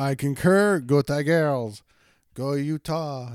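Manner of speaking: bad fake French accent, very slow and drawn out. Co-host adding a last word as the show ends, in a horrible fake French accent. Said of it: "That was a horrible fake French accent".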